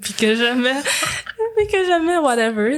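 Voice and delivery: high, wide-ranging laugh through words, pitching way up.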